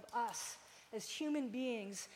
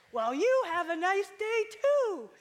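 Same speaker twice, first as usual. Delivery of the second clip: loud, raised-pitch delivery; 8 semitones higher, 13 dB louder than usual. Retelling a checkout line, imitating the cashier answering in a loud voice. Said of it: "the cashier goes in this loud voice".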